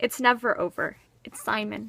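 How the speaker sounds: usual speaking voice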